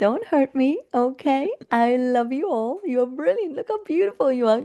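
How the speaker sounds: very high, overly sweet, ingratiating tone. Showing how someone who feels unsafe on stage talks, super nice tone. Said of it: "your tone might be super nice".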